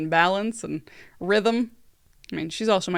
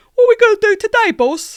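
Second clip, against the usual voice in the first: loud, very high-pitched cartoon voice; 12 dB louder than usual. Showing the voice a mermaid had that wasn't hers, Pinky from Pinky and the Brain voice. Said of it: "like Pinky from Pinky and the Brain".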